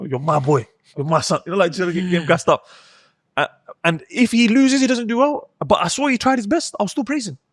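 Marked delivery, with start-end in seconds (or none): 0.0-1.4 put-on hyped-up hype talk. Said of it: "I'll start hyping him up".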